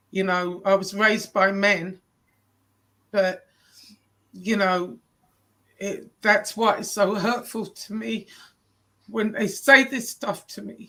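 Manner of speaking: emotional, close to crying, fighting back tears. Speaker opening up to a supportive listener, emotional, near tears. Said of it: "I'm sorry".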